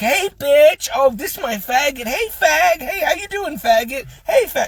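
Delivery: very high, showy, flamboyant delivery. Retelling how club regulars greeted each other: imitating flamboyant greeting. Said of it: "this is how they talk".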